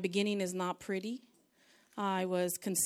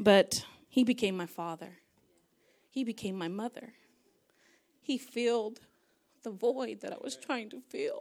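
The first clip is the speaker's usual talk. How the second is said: trying not to cry, holding back tears; 2 semitones higher, 3 dB louder than usual. Giving a testimony about God in the speaker's life, holding back tears. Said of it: "I can't help but cry when I think about it".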